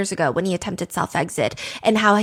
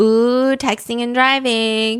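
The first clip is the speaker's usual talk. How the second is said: imitated teasing tone; 2 semitones higher than usual. Recapping a scene where a man yaps in the car, imitating him teasing. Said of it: "he says in a teasing voice".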